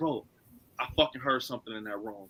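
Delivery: very quiet, deep, hushed macho bro voice. Speaker retells what Monica told them, imitating Monica's manly voice. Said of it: "she puts this manly ass voice on".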